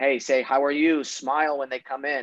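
ordinary talk

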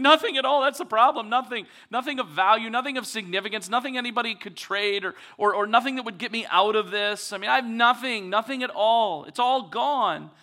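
play-acted, high, loud, despairing outburst blurted out at once. Retelling a woman's reply to Elisha, retelling a blurted answer. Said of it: "And she just blurts out".

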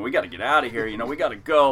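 mock-panicked screaming and shouting. Recounting a whale incident on a boat, reenacting what the speaker yelled: retelling a panicked scream. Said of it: "I'm just screaming".

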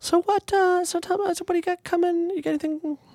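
voice shooting very high, sharply rising pitch. Asking the other speaker what they have coming up, voice going high. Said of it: "your voice goes high when you try".

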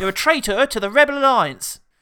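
put-on very loud, booming, high West Country accent. Retelling a comedian's bit of Darth Vader in a West Country accent: David Prowse as Darth Vader. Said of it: "Bill Bailey's impression of David Prowse being Darth Vader".

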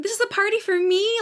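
mock, high, delighted, brimming-with-happiness gush. Retelling a TV scene where Buffy finds a party: imitating Buffy, so happy. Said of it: "so happy".

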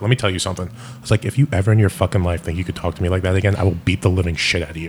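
put-on menacing whisper. Retelling a threat said into a customer's ear: retelling a whispered threat. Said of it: "very, very, very whispery".

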